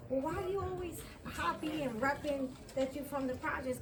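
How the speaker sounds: ordinary talk, nothing marked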